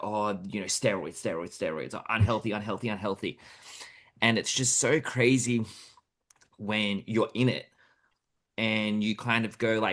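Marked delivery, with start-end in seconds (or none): 0.0-3.4 scornful, mocking parody voice. Retelling what people outside the gym say about bodybuilders: imitating gym outsiders. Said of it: "they go".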